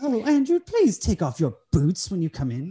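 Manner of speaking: put-on, high, sing-song, sort-of English accent. Voicing the woman who checks surfaces for dust, speaking to Andrew, sort of English accent. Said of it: "it's like sort of English".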